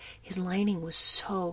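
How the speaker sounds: ordinary delivery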